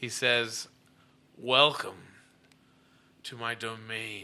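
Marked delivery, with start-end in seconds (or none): 1.4-4.2 scratchy, rasping put-on creature voice. Game master voices a skeleton-jawed figure's greeting, in a rasping voice. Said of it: "in this rasping voice".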